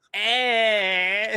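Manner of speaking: imitated nerdy voice. Retelling a film scene where a potion wears off: imitating a nerdy voice. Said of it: "all of his really nerdy voice comes out".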